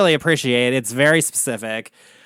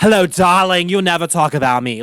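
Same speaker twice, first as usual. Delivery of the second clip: put-on old-school New York drag queen accent. Describing accents in a family, doing an old-school New York drag queen accent. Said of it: "that old school New York drag queen accent".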